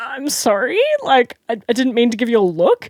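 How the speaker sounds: stuttering. Retelling being confronted by a woman, the speaker acts out their own stuttering apology. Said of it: "like stuttering".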